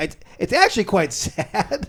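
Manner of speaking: talking through giggles. Saying something is sad, laughing while talking. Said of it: "I don't know why I'm laughing".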